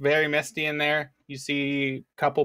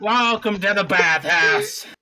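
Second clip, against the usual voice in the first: put-on tipsy dwarf voice, slightly drunk, louder; 5 semitones higher, 5 dB louder than usual. A game master voices a short dwarf greeting visitors at a bathhouse, tipsy dwarf voice. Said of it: "there's a short dwarf male there, ... He seems a little tipsy for the day".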